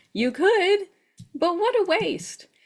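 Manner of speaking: high, mocking words spoken through a laugh. Retelling what an Akashic Records practitioner told her: imitating someone laughing while talking. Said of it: "she said with this laugh".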